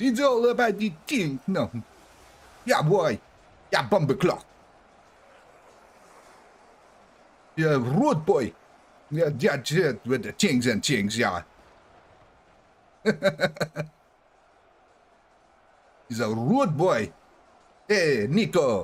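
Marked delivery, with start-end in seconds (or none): 2.6-18.8 horribly bad, badly done put-on Jamaican accent. Speaker admits the accent is bad, then does it anyway: horribly bad Jamaican accent. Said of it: "my Jamaican accent is just horribly racist".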